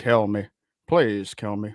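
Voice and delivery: put-on low British accent, timbre at back of voice. Trying out an impression for the others: impression, timbre in back of voice. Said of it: "that timbre in the back of my voice".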